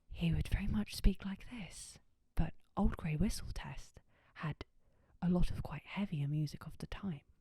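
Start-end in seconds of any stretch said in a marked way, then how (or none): 0.2-2.0 soft, whispery presenter voice. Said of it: "I'm gonna go do some A S M R now".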